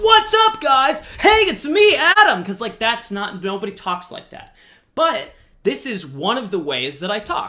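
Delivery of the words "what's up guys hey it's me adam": fake over-the-top hype, very high and loud. Explaining how people should not talk in videos, demonstrating an over-the-top fake voice. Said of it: "go over the top, to be fake".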